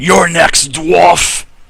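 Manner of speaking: loud, snarling, menacing delivery. Game master voicing a creature that turns on the dwarf, snarling. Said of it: "then he snarls and he, he says".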